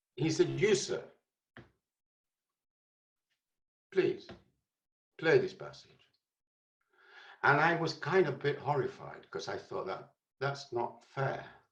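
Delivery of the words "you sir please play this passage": put-on Hungarian and Polish accent. Retelling what a man said to him, Hungarian-Polish accent. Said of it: "He spoke in a kind of Hungarian Polish accent".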